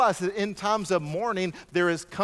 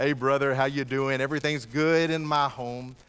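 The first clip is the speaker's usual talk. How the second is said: fake, put-on churchy voice; 7 semitones lower than usual. Imitating churchgoers greeting each other at church: put-on religious voice. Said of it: "we get our religious voice on".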